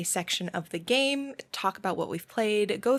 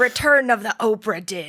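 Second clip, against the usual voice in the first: loud, drawn-out pirate accent, fully in character; 8 dB louder than usual. After failing one phrase, speaker tries a different one, in a pirate accent. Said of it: "Tell me to say something else as a pirate".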